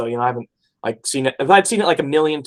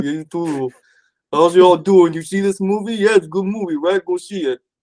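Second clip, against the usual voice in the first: easygoing, relaxed character voice, pitched slightly up; 4 semitones higher than usual. Greeting viewers at the start of a movie talk: Rocky voice. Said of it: "talk like Rocky".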